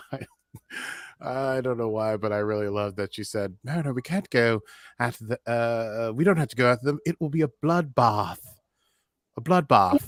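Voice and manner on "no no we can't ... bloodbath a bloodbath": put-on British accent with voice raised. Quoting what Petra said, in Petra's British accent. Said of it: "because of the British accent that Petra has".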